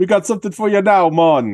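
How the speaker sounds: put-on Jamaican accent. Retelling two characters from Weekend at Bernie's: put-on Jamaican accent. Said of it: "say in their best uh Jamaican accents".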